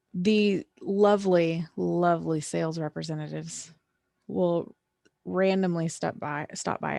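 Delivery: slow, thick, heavy sarcasm. Giving advice on learning the basics of an office; very sarcastic. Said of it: "I say that very sarcastically".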